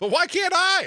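high, loud mock whine.

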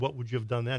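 normal talking voice

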